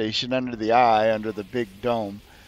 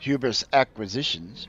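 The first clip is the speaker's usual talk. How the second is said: put-on neutral, flat synthetic android voice. Acting out a phone call, the speaker voices the receptionist in a neutral android voice. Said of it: "a rather neutral android voice come on and say".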